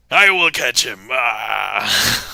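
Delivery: very slow, loud, drawn-out angry pirate voice. Voicing a viewer shaking fists angrily: angry pirate vampire hunter voice. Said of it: "a pirate vampire hunter".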